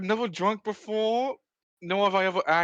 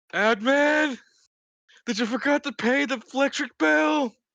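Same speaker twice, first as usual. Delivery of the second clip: high, acted in-character scream; 6 semitones higher, 4 dB louder than usual. Voicing Lance, who is complaining about a freezing room: screaming in character. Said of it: "the muffled scream of Lance".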